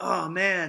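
fake out-of-breath panting. Retelling a player's words after a hard hit: imitating someone out of breath. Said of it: "trying to catch his breath".

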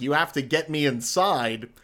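plain

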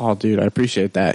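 usual speaking voice

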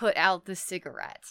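ordinary talk, nothing marked

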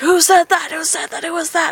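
play-acted, high-pitched screaming out loudly. Retelling the MC grabbing the microphone and shouting at the room; retelling the MC screaming. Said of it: "just starts screaming like".

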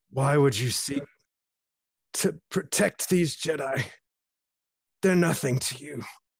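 words pushed out gasping between ragged breaths. Narrating to the players as a fallen lightsaber fighter speaks, gasping for air, wounded. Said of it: "as he's gasping for air with a cauterized wound".

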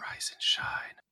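soft whisper, close to the ear. Leaning over to wake him up, whispering in his ear. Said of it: "I'll just lean over and whisper in his ear".

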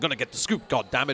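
rapid-fire delivery, very fast talking. Describing an old newspaper film, the speaker mimics how its characters talk, very fast. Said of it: "they talk very quickly like this".

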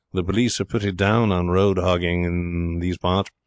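ordinary delivery

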